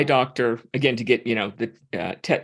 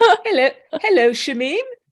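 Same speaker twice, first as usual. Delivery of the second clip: put-on Welsh accent, much higher and louder; 14 semitones higher, 5 dB louder than usual. Asked by a co-host to repeat the greeting: best attempt at welsh accent. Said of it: "that's my best Welsh accent".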